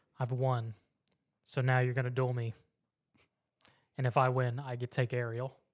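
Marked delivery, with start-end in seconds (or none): none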